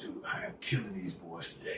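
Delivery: hushed whisper, barely voiced, under the breath. Speaker retelling his answer when asked what's up during a game, re-enacting a whisper. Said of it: "I'm whispering to him".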